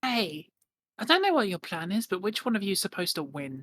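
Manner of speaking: character whisper. Leaning in to a pirate to ask a question in character: whispering in character. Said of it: "lean into Elizabeth and just whisper".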